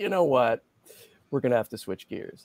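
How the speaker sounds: ordinary delivery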